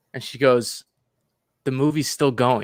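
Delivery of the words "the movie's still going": put-on bone-dry, flat, expressionless deadpan. Retell how a lady in the movie looked over and answered you, imitating a deadpan lady. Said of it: "the lady just deadpan looks over".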